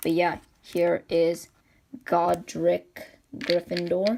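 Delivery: very slow, careful speech.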